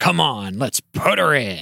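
put-on gruff, rough old sailor pirate voice. Narrating a story, giving Roseanne's line in a Roseanne pirate voice. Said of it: "Roseanne sounds like a pirate".

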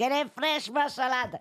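put-on Spanish-accented voice. Recalling an old market fruit-and-vegetable seller, in a Spanish accent. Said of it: "avait l'accent espagnol".

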